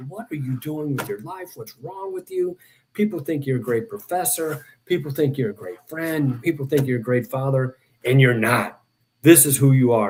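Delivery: acted-out, furious, angry rant. Recounting walking down the street, retelling yelling at himself. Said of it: "I started yelling at myself going down the street".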